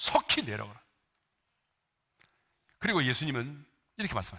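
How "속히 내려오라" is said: 속히 hit hard and firm, strongly stressed. Sermon quoting the Lord, deliberately emphasized words: stress on 속히. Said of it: "제가 지금 강조해서 발음했던 단어들이 있습니다. ... 속히".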